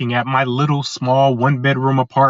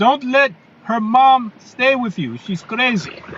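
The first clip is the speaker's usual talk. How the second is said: put-on thick European accent, very high-pitched; 11 semitones higher than usual. Quoting what a man told the speaker years ago, thick european accent. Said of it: "in his thick European accent".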